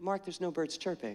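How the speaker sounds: gentle sweetness, very soft and quiet. Retelling how Susan answered the speaker's question, imitating Susan's sweetest voice. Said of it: "the sweetest voice said".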